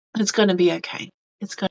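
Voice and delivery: put-on sweet, soft whisper. Describing a comforting voice heard while feeling sad: imitating a sweet whisper. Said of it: "Just whispers, sweet little whispers".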